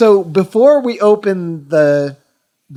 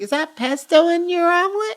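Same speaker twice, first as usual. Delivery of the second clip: put-on girl voice, pitch way up, very high; 12 semitones higher, 5 dB quieter than usual. Explaining a quote to the others: Bill Burr's girl voice. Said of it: "he does, like, the girl voice. He's like".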